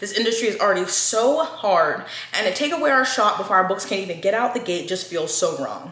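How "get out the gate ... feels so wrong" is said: ordinary talk, nothing marked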